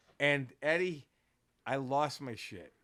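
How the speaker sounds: ordinary talk, nothing marked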